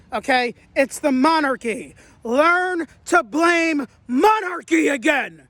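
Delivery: heated, agitated, upset, worked-up ranting. Venting to video viewers, very upset. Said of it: "Sorry, I'm very upset".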